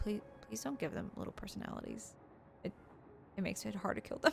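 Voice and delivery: mock quiet, sad, pleading tone. Retelling Jonathan's plea to stop giving bugs personalities: imitating Jonathan quietly and sadly. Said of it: "he was truly saddened by it".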